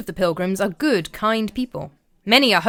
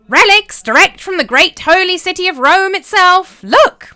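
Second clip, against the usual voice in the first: shrill, bleating goat squeak, very high, very loud; 10 semitones higher, 9 dB louder than usual. A man up on a chair hawking relics to the common room, screeching goat-like squeak. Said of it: "squeaked out in a voice like a screeching goat".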